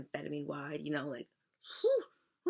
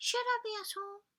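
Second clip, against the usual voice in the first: very high-pitched little devil voice. Acting out an exchange between Dad and Maggie, Maggie answering: high-pitched devil voice. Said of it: "in like a high-pitched devil voice".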